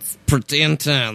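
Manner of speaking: put-on Eastern European accent. Discussing a TV episode, speaking in a Borat accent. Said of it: "why are you talking like that? / You're Borat".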